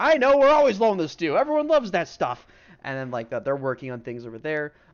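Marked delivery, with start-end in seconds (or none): 0.0-2.5 shrill, very high-pitched, very loud hollering. Voicing a chef working in a busy tavern kitchen: acted chef shouting. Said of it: "shouting, like".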